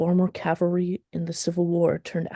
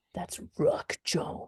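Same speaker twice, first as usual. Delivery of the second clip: whispered, gravelly, hushed spooky tone; 6 dB quieter than usual. Rehearsing a scene, answering who that figure is: gravelly voice. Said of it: "he says it in a gravelly voice".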